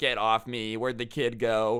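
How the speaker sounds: ordinary talk, nothing marked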